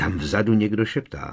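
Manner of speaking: ordinary talk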